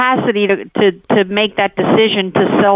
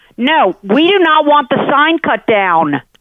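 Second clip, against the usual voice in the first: deliberate, pitched-up, drawn-out, word-by-word insistence; 6 semitones higher than usual. Refusing a caller's request on the phone, yelling. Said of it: "you don't have to yell at me about it".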